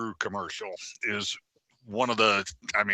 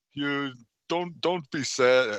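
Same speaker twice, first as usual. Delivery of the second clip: thick, heavy, put-on Swedish accent; 5 semitones higher than usual. Retelling a commercial where a swedish man speaks, in a heavy swedish accent. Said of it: "in a heavy Swedish accent".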